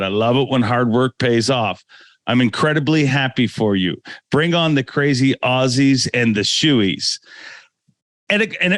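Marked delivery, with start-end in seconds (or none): none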